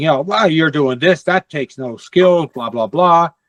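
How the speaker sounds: play-acted condescending, dismissive brush-off tone. Retelling what people said about the speaker's imaging setup, mocking a condescending tone. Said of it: "with a rather condescending tone".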